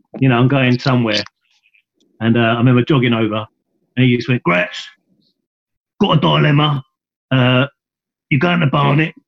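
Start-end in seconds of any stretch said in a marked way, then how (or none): 4.4-9.1 effortful, throat-straining put-on coach voice. Retelling being called over and told he was going: imitating his voice. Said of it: "I won't do the voice now".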